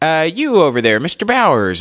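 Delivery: light, high little voice from a deep-voiced man. Retelling how the teacher called on the speaker in class: imitating a light voice. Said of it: "but he has a light voice".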